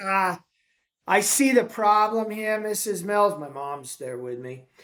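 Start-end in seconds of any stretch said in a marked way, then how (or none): 0.0-3.4 put-on nasal New England accent, higher pitch. Retelling what a man said to the speaker's mom in his office, imitating nasal new england accent. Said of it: "he talked in this nasally New Englandy accent".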